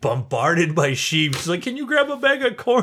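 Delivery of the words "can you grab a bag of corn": mock, very high, hollered yell. Speaker retelling how she yelled at them amid the sheep: imitating someone shouting. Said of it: "She's yelling at me".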